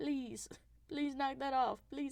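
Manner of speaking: mock crying, pleading. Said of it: "I'm crying. Crying in the streets".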